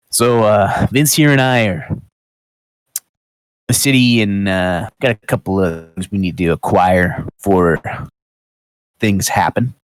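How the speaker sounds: voice brought down low, confiding. A character leans in a little to speak, lowered voice. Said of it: "kind of lowers his voice, leans in".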